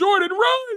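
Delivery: very high-pitched, urgent screaming call. On a live stream, the speaker retells how someone was screaming, retelling a scream. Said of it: "tell me how he's screaming".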